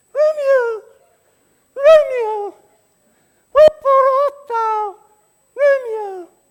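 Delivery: squeaky, very high, loud tiny voice. Playing Juliet in a scene, as promised: monstrous little voice. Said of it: "I will speak in such a monstrous little voice".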